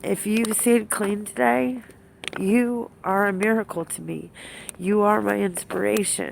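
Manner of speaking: teary, emotional, on the verge of tears. Speaker tells fellow recovering addicts who stayed clean today; teary-eyed. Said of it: "I'm getting teary eyed".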